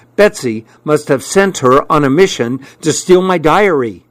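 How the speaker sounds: ordinary delivery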